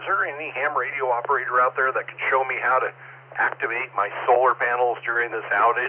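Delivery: ordinary talk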